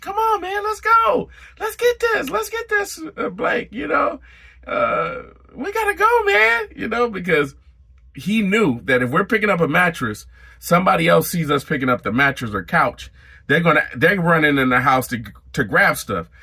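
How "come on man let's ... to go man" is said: play-acted, very high-pitched yell. Retelling a coworker hurrying the crew on the truck: imitating someone yelling. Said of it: "he's yelling".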